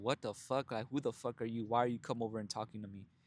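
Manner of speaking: put-on disgusted tone. Retelling how a lady reacted to a compliment, mock-disgusted. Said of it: "she looked at me with disgust".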